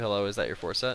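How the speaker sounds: normal talking voice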